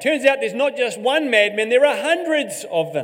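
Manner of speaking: loud shout.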